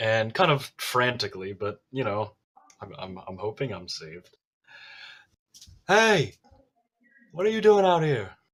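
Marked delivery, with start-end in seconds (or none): 5.9-8.3 loud high-pitched shout. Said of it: "There's no need to yell".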